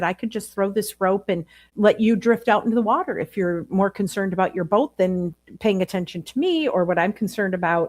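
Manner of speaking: ordinary talk, nothing marked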